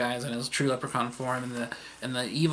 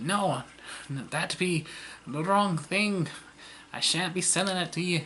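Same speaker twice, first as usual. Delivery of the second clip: bad put-on Irish accent; 6 semitones higher than usual. Acting out a play scene where someone refuses Jake, stereotypical Irish accent. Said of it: "stereotypical Irish accent".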